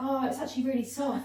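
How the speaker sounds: amused, laughing delivery. Retelling what the person she waxed said afterwards: imitating someone laughing. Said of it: "afterwards she was laughing 'cause she was like".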